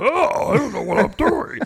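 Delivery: growling monster voice. Talking about a quarterback facing zone defense, as Joe Flacco in monster voice. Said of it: "my monster voice".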